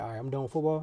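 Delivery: ordinary talk, nothing marked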